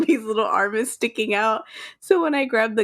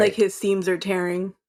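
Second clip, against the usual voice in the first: ordinary delivery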